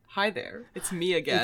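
soft, hushed whisper. Voicing the smile guy greeting someone again: whispering as the smile guy. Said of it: "it's whispers".

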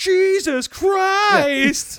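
shrill, loud, comic shocked cry, Christ drawn out. Recapping a story, acting out a character's shocked line in a hilarious tone. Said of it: "in a hilarious tone".

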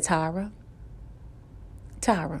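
very soft, still, small voice. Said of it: "in a still, small voice".

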